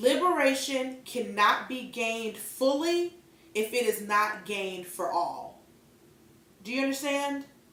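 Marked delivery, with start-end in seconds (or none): 0.0-5.6 very slow, deliberate, word-by-word delivery. Speaking straight to the listener in their own words, very slow. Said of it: "I'm going to say it very slowly".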